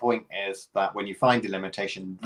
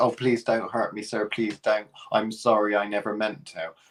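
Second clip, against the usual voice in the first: mock humble, cowering pleading tone. Acting out the exposed humbug wizard begging Dorothy: acting out a humble pleading humbug. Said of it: "a humble humbug".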